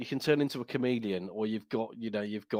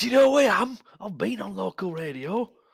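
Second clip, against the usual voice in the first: put-on Northern English accent, high, drawn out; 10 semitones higher, 7 dB louder than usual. Joking about having been on local radio: put-on Northern accent. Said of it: "I was doing Northern".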